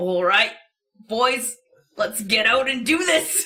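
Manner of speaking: loud, rough, gravelly male voice. Asked by another person to hear it, the speaker tries a gravelly man voice. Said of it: "Let's hear your gravelly man voice".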